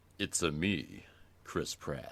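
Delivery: very slow, put-on announcer voiceover voice. Performing a line about the Mario film in a voiceover voice. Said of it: "voiceover voice going on".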